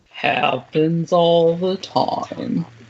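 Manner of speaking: low, slow, mopey, gloomy drawl. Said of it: "Not in her Eeyore voice".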